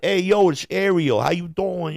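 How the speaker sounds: put-on high Italian accent. Retelling a comedy bit about walking into a brooklyn bar, in an italian accent. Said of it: "doing the Italian accent".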